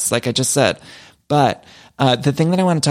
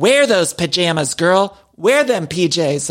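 put-on cheering, slow and drawn-out; 4 semitones higher than usual. Speaker retells what they yelled at the screen during a show: retelling shouting at the screen. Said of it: "I was shouting at the screen".

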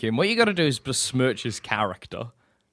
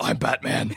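dark vigilante caped-hero voice; 3 semitones lower than usual. Describing a prank while dressed as Batman: Batman voice. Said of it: "I get Batman's voice down perfectly".

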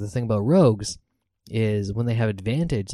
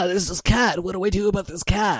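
put-on monster voice, much higher pitched; 9 semitones higher than usual. Imagining what the monster says when a wild cat runs around, voicing the monster. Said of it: "whatever monster we're fighting be like".

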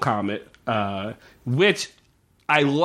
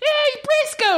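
mimicked squeaky accent, put-on voice, much higher pitch. Critiquing the accents of a show's characters, imitating the girl's squeaky accent. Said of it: "squeaky. Her accent's just squeaky".

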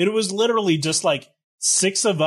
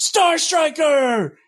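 mock shrill, very high yelled shout; 12 semitones higher, 4 dB louder than usual. Retelling the call you had to shout back: imitating a yell. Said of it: "all you had to do in return was yell".

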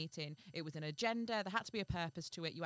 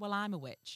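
usual speaking voice

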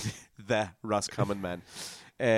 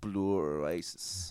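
put-on Dublin accent, lower pitch; 4 semitones lower, 6 dB quieter than usual. Discussing favorite references, slipping automatically into a Dublin accent. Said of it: "automatically you go to like a Dublin accent".

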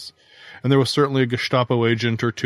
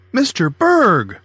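joyful, delighted call, very high and loud; 10 semitones higher, 6 dB louder than usual. Narrator reads an eight-year-old girl greeting a visitor at the door, with delight. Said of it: "she said with delight".

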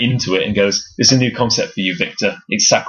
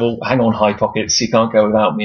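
normal talking voice

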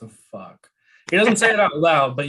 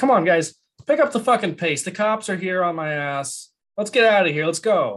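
urgent, pitched-up, high voice; 5 semitones higher than usual. A game master voices a character yelling at kobolds and a bullywug to hurry: yelling at his crew. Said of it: "he just continues yelling at these other".

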